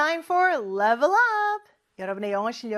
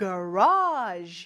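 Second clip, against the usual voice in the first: garage drawn out, exaggerated stress and pitch. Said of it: "제가 좀 과장되게 하긴 했어요".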